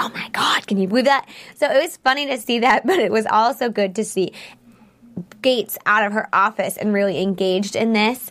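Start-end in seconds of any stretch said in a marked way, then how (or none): 0.0-1.3 acted-out excited whisper. Describing people up close reacting to Castle, mimicking them whispering. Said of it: "they're all up close whispering".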